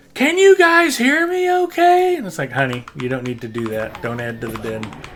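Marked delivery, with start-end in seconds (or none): 0.1-2.1 very high-pitched, loud, drawn-out holler. Telling how his wife acts in a loud restaurant with friends, imitating his wife yelling. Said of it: "my wife will just start yelling".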